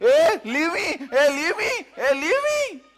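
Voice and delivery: shrill, loud, very high-pitched repeated screaming. Retelling how a bitten man screamed at him: imitating someone screaming. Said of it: "he's screaming".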